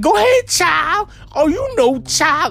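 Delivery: very high, slow, drawn-out caricature voice.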